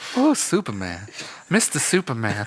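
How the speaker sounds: put-on helpless, damsel-style southern belle voice. In an improvised superman bit, calling out to superman in a southern gal voice. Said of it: "I'm just a southern gal".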